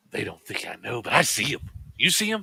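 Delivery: hushed, secretive whisper.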